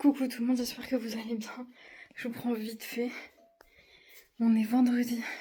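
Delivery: winded, out of breath. Greeting viewers quickly on a Friday before a school pickup, out of breath. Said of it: "je suis essoufflée".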